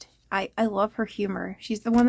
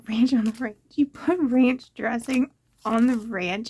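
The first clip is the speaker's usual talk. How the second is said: talking through laughter. Reacting to something Liz said, laughing while talking. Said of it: "I'm I'm I'm laughing".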